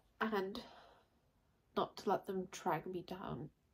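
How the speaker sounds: soft, quiet voice with emotion rising. Speaker opening up to a listener, getting emotional. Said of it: "Sorry, got emotional".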